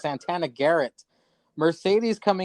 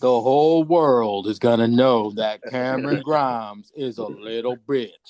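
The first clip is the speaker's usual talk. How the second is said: low, taunting wrestling promo delivery; 4 semitones lower, 4 dB louder than usual. Acting out a wrestler's promo line: Damian Priest's line. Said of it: "let me do, uh, Damian Priest's line".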